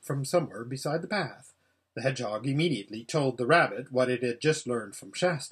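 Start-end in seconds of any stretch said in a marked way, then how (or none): none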